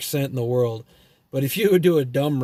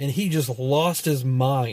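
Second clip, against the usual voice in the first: ordinary talk, nothing marked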